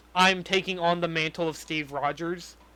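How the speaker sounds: ordinary talk, nothing marked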